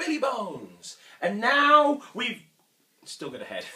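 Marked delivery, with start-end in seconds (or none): 0.0-1.0 loud, high-pitched shout. Leading everyone in shouting the magic words: shouting magic words. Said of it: "I want everybody to shout the magic words".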